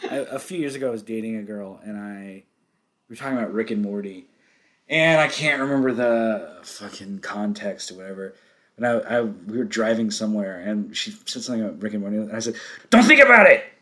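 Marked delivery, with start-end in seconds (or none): 12.9-13.6 shrill, loud, high cartoon voice, belted out. Retelling own line to a girlfriend while driving: Rick and Morty character voice. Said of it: "How did you sound like him?".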